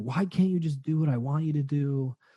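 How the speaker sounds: put-on drunken outburst. Retelling what a woman said on a call after drinking, mimicking a drunk freak-out. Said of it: "she drank a lot and she freaked out".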